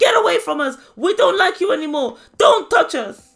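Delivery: screaming and shouting, high and very loud.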